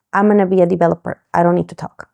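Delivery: ordinary delivery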